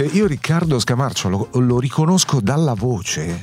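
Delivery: ordinary talk, nothing marked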